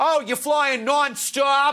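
put-on drawn-out, high Boston accent with slight lisp. Retelling what a boston transit cop said at the airport: imitating a boston transit cop. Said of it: "He goes".

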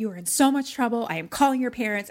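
enraged, furious, threatening raging tirade. Retelling a story, the speaker quotes the woman scolding Luke: imitating a raging outburst. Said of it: "she's like raging".

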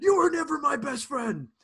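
very high-pitched, very loud yell. Retelling a wrestler's line from a pay-per-view match: imitating someone yelling. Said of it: "at one point he just yells".

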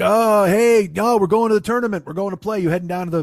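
play-acted loud voice. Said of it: "and he's loud".

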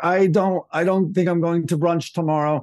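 put-on foreign-accented female voice. Retelling overhearing a speakerphone call, imitating Ivana's foreign female voice. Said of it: "I hear this like foreign female voice".

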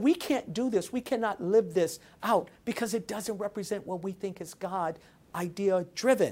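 plain

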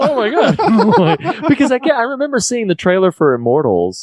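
laughing in shock.

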